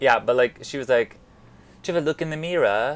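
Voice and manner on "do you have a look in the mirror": attempted New Zealand accent that sounds British. Quoting a woman with a New Zealand accent, the speaker attempts an accent that sounds British. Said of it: "No, that's British".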